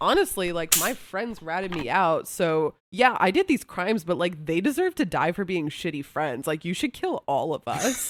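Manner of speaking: usual speaking voice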